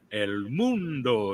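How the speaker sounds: grand, huge, deep baritone delivery. Imitating a TV announcer saying one phrase: imitating a huge baritone voice. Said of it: "He's got that huge baritone voice".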